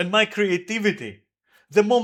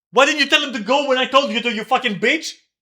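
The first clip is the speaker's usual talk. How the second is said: raging, abusive, furious outburst with pitch raised; 5 semitones higher than usual. Ranting into the microphone about him, yelling angrily. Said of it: "I'm done yelling at the microphone".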